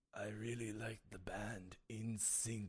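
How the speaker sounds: put-on slow, weak old man voice, as if dying. Quoting a film's old man while he is dying: imitating a dying old man. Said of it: "When the old guy is dying, and he's like".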